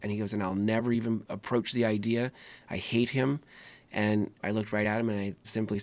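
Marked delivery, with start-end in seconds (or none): 0.3-3.4 put-on venomous, bitter, vehement anger. Retelling what a gentleman in jail said about his attacker: retelling an angry line. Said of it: "angrily and vehemently discussed".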